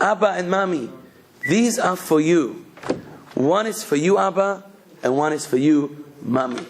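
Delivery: put-on sweet-toned voice. Retelling a daughter answering her father's shout, in Sarah's sweet-toned voice. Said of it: "with a nice, sweet toned voice".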